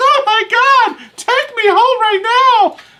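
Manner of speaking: mock shrill, very high woman's freak-out voice. Acting out a date's reaction to a bad remark: imitating a woman flipping out. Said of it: "flips out on you and says".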